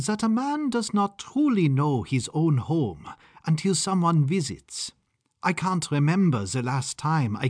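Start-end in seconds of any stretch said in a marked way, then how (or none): 0.0-4.9 thoughtful musing, higher. Rudolph muses aloud to Maude, who admires his room, musing. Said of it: "mused Rudolph".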